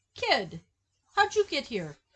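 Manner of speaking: terrible high character voice, swooping and sing-song. Retelling a movie scene where a kid lands in a car: terrible Jack Slater impression. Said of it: "That's a terrible impression".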